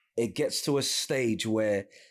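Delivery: ordinary talk, nothing marked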